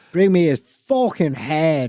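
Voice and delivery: put-on Irish accent, put on. Repeating the other speaker's quote of a character's dad in a put-on Irish accent. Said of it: "my Irish accent isn't that bad".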